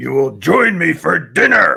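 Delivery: acted-out, very slow, rough, barked yelling. Acting out the Beast's dinner order when asked to go ahead: imitating the Beast yelling an order. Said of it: "he yells it at her".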